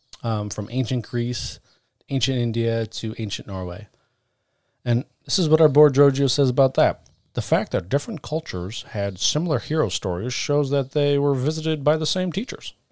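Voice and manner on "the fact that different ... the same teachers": distinctive statesman-like oratorical cadence with paced phrasing. Reading a quote from the board in a put-on voice: Barack Obama cadence. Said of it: "that sounded more like Barack Obama".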